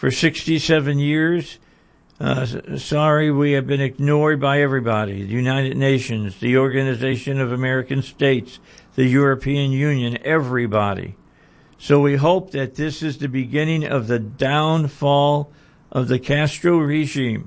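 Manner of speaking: usual speaking voice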